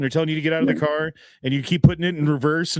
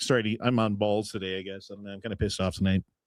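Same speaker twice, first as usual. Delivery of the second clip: ordinary talk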